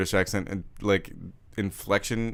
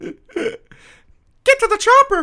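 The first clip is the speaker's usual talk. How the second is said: very high, very loud, slow, drawn-out squeaky mouse yell; 10 dB louder than usual. Doing an impression of Arnold Schwarzenegger as Mickey Mouse. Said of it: "Can I do Arnold Schwarzenegger as Mickey Mouse?".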